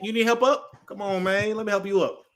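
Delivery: put-on easygoing, unbothered, calm, slow voice. Imitating Leggett offering a beaten player help up: imitating Leggett's calm voice. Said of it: "in his calm voice".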